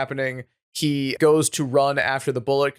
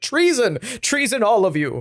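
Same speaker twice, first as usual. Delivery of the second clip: put-on, shrill, accusing yell, repeated over and over; 7 semitones higher than usual. Retelling a story where Horatio accuses everyone of treason, imitating Horatio yelling. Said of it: "he's yelling treason everywhere".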